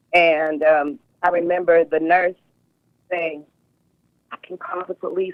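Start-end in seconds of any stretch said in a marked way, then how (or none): 4.3-5.3 hushed, confidential whisper. Recalling a hospital nurse offering to call the police, retelling her whisper. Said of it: "like she's whispering to me".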